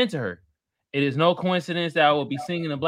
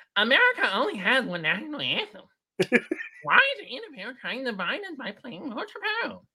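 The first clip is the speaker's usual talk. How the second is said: high, swooping, sing-song witch voice; 7 semitones higher than usual. Reading her post aloud, the speaker does a Lauren Boebert impression. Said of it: "I'm going to read it like her".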